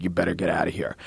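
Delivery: low, soft, panicked voice. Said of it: "the panic in this guy's voice".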